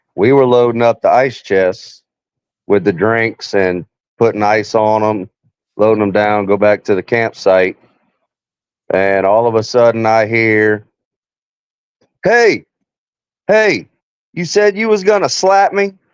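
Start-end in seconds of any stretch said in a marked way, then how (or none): 12.3-15.9 mock, confrontational, challenging shout pitched very high. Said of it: "just starts yelling".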